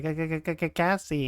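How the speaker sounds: very slow, stammering, dopey little dumb voice. Retelling a farewell scene, doing B2's dumb little voice. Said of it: "his dumb little voice that he does".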